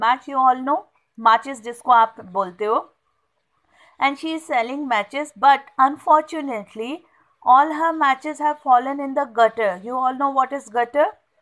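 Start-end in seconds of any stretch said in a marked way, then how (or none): none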